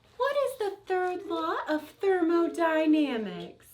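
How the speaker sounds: very high, squeaky, tiny mouse voice. Asking a quiz question in the voice Sam asked for: little quiet mouse voice. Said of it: "He said a little quiet mouse voice".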